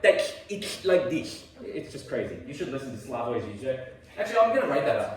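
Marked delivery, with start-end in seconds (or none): 0.0-1.4 raised pitch with every S sound brought out. Showing students how a philosopher talks: Slavoj Žižek impression. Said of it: "his S's sound like".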